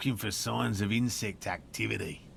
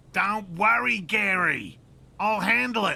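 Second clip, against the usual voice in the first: very high shouting with one word drawn out; 11 semitones higher, 7 dB louder than usual. As police arrive, a character speaks up, shouting. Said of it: "You don't have to shout".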